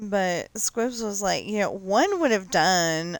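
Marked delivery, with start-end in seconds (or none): 1.7-3.2 put-on Valley Girl way of talking. Retelling what someone said about sending gifts, in a valley girl voice. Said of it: "he probably didn't say it Valley Girl like I just did".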